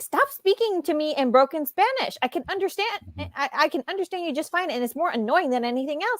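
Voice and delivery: curt snapping tone. Retelling a scene where Gabi answers his broken Spanish, imitating Gabi snapping. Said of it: "Gabi snapped at him like".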